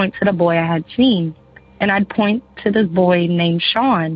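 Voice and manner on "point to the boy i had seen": plain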